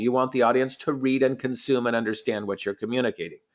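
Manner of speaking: ordinary talk, nothing marked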